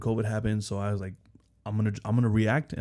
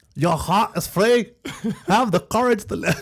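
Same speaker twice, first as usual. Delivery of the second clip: bad put-on Scottish accent, higher and louder; 11 semitones higher, 8 dB louder than usual. Quoting William Wallace from Braveheart: worst William Wallace Scottish accent.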